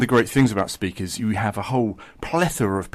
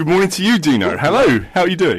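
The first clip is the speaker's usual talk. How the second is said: big, booming, loud, high voice; 7 semitones higher, 6 dB louder than usual. Greeting the interviewer at the start: big booming voice. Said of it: "it's your big booming voice".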